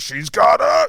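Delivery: very loud, rough, hoarse, high yell. Retelling a running joke in the house, doing an Al Pacino impression. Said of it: "this Al Pacino impression".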